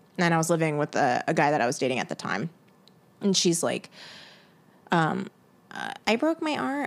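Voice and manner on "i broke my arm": put-on high, childlike baby-talk voice. Retelling what a neighbor said when asking for help: imitating a baby voice. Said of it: "talk in a baby voice".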